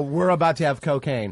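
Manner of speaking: ordinary talk, nothing marked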